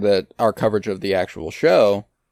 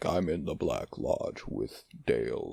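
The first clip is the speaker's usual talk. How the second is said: put-on dark demonic voice; 8 semitones lower, 15 dB quieter than usual. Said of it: "a dark demonic voice comes out".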